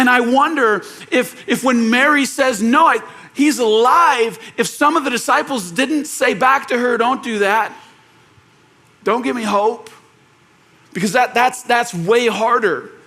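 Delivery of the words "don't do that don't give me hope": mock cracking, breaking voice. Imagining what the disciples said back to Mary, imitating a cracking voice. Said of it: "with like this cracking voice".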